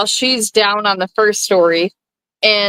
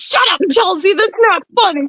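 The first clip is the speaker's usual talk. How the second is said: mock, very high-pitched scolding, telling-off yell; 10 semitones higher than usual. Retelling Mom's reply to a joke in the car: imitating Mom yelling. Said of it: "she's yelling at me".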